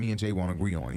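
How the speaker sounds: ordinary talk, nothing marked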